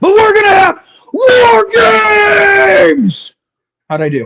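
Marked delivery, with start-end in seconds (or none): 0.0-3.3 very high, very slow roar, "games" drawn out. Asked by the host for his War Games announcement, [name] yell. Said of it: "become [name] and yell War Games".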